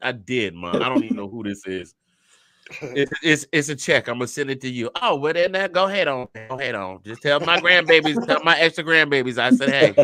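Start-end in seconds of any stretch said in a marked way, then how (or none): 5.0-10.1 put-on Southern grandmother voice. Retelling his mama calling him about a check: imitating his mother, Madea-like voice. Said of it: "it sounds a lot better when I do it like this".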